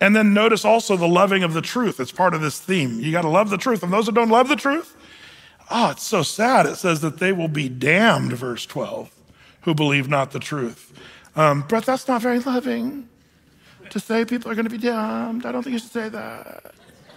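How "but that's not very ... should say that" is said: put-on creaky millennial vocal fry, raised pitch. Imitating people who object to talk of damnation: imitating millennial vocal fry. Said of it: "millennial vocal fry".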